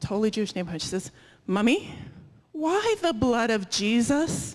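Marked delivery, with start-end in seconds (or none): 1.5-4.6 play-acted child voice, loud, carrying and drawn out. In a retold story, the speaker quotes a child in line asking her mother, really loud. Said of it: "Really loud".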